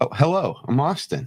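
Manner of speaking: very high-pitched, courteous bank-teller voice. Asked to try once more like you work at a bank, introducing yourself. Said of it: "like you work at a bank".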